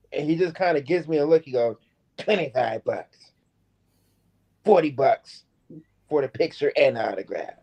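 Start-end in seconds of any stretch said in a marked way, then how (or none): 2.1-7.4 sassy, attitude-filled delivery. Retelling a wrestler quoting his autograph price: imitating someone with attitude. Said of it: "kinda with an attitude".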